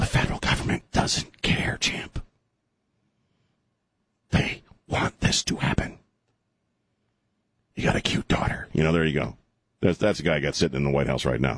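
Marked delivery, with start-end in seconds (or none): 0.0-8.7 put-on, acted whisper. Mocking the federal government's stance on the border: whispering like Joe Biden. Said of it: "I'm whispering like Joe Biden".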